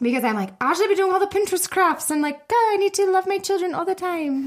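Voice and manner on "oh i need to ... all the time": mocking, pitched-up, too-perfect posh society voice. A mom describing her mom guilt, voicing society's expectations: put-on society voice. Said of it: "that's my society voice".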